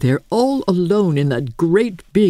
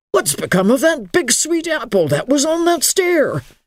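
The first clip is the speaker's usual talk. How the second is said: taken-aback, startled, sudden and pitched-up; 8 semitones higher than usual. Lofty John whirls about and demands of Emily, startled. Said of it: "demanded in a startled voice".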